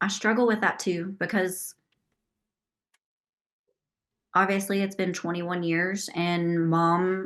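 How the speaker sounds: emotional voice, welling up, fighting not to cry. Asked how their mom is doing, the speaker answers while getting emotional. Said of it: "I get a little bit emotional talking about this".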